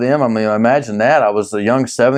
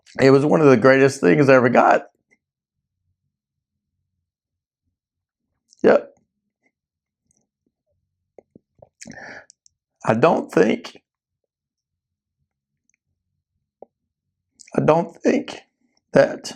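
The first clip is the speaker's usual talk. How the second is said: choking up, close to tears, voice breaking; 2 semitones higher than usual. Remembering parents buying a weightlifting set: choking up, close to tears. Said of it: "I'm gonna cry, probably".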